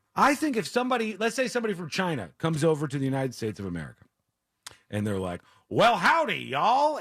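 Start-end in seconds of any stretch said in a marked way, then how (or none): 5.7-7.0 put-on American Western accent, raised pitch. Imagining a visitor to the United States greeting people: imitating a Western accent. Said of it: "some Western accent".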